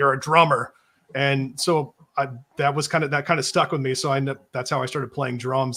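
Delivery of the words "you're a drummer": put-on stern voice. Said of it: "very stern".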